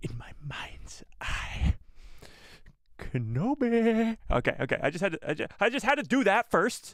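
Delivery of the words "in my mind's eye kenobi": very slow whispered villain voice, name stretched out. Trying a best character impression for the group: Maul impression. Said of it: "my best Maul impression".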